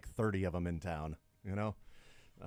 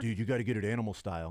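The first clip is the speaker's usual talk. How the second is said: ordinary talk, nothing marked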